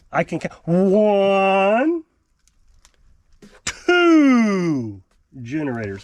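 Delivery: very slow, sing-song, mildly sarcastic delivery. Counting the two generators from an earlier video: a little sarcastic. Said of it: "I know I'm being a little sarcastic".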